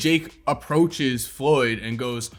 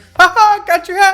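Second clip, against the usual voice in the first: put-on very high, very loud, shrill, slow bratty childish taunting; 9 dB louder than usual. Retelling how Jake Paul grabbed a hat: childish taunt imitating Jake Paul. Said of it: "the most childish way you could ever say".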